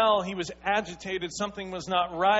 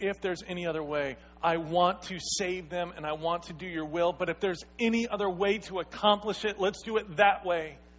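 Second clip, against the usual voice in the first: normal talking voice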